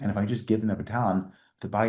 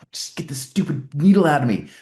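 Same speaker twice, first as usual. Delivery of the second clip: put-on, high, loud, on-edge pleading outburst; 7 semitones higher, 10 dB louder than usual. Describing a patient stuck with needles, imitating an on-edge patient. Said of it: "on edge".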